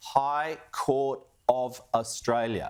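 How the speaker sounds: slow, deliberate pace. Responding to the opposition over a High Court decision, the speaker says it slowly. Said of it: "I'll say it slowly".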